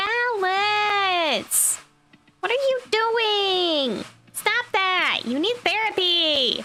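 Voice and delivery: high, whiny, hyper dog voice, "Balance" stretched out. Showing what the Bally character voice sounds like: Bally character voice. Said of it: "which for context is a lot more like".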